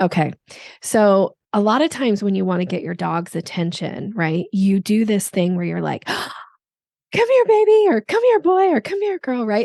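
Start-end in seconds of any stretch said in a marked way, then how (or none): 7.1-9.5 lively, energetic, very high calling voice. Showing how people call their dog for its attention, high-pitched dog-calling voice. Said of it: "a little bit of a high pitch".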